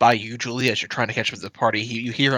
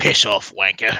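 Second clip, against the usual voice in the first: rough, gruff sailor voice; 2 semitones lower than usual. One of them looks up from the bread at the onlooker, opens its mouth and speaks: gruff sailor voice. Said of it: "you hear the gruff voice of a sailor go".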